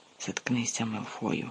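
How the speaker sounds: quietly. A boy answers another boy's sneering remark, quietly. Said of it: "тихенько сказав Гаррі".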